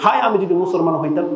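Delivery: ordinary delivery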